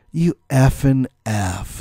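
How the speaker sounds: play-acted scornful, contemptuous, dripping with disdain. Retelling a classmate's insult about his outfit: imitating a disdainful classmate. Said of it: "the disdain dripped from her mouth".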